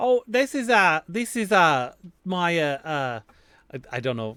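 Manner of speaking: loud, hesitant, halting put-on New Zealand accent. Playing a stranger asked about their scent, sort of new zealand accent. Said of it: "maybe sort of a New Zealand accent".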